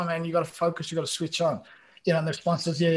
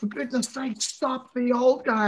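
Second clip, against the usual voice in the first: put-on scream, pitched higher; 8 semitones higher than usual. Retelling a teammate yelling at them mid-game: imitating Jorge screaming. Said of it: "Jorge's screaming at me".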